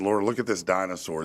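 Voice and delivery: ordinary talk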